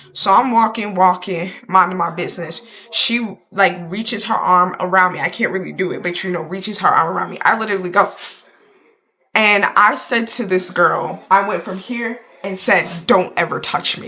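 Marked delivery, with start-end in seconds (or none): 13.0-14.0 solemn serious delivery. Retelling what they said to a girl: retelling a serious warning. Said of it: "I have to be so serious".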